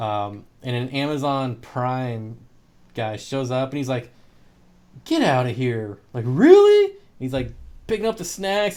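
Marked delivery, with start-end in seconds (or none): 5.0-6.9 acted thrilled disbelief, very loud, swooping, excited outburst. Retelling a delivery guy's reaction to a snack basket, imitating someone super excited. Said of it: "super excited".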